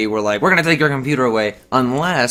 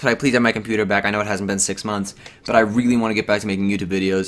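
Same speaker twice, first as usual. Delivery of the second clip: normal talking voice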